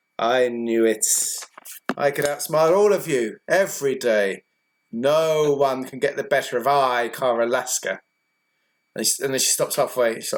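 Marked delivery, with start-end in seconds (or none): 0.2-8.0 smug, self-satisfied, gloating, crowing tone. Narrating a game, voicing a fellow player who just won: smug gloating as Cara Lasker. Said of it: "She's very smug right now".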